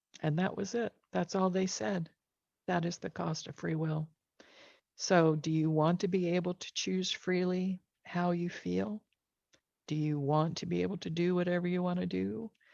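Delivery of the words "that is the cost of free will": put-on still, calm whisper, quieter. Retelling a voice heard in reply: imitating a quiet, calm whisper. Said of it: "most quiet, still, and calm whisper".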